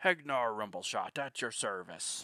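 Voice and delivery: loud, slow, drawn-out swashbuckling pirate voice. Voicing a game character's greeting: pirate-sounding Hegnar Rumbleshot voice. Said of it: "I didn't mean to make him sound like a pirate".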